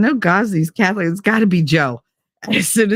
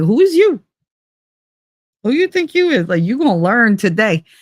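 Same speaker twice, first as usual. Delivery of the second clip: put-on confrontational, tough street-attitude voice; 2 semitones higher than usual.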